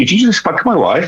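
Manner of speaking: put-on Welsh accent pitched very high. Retelling what a friendly Welsh man asked the speaker, imitating a Welsh accent. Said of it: "in this Welsh accent".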